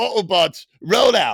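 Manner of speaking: put-on British accent. Showing off accents to the others, in a put-on British accent. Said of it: "now that was British".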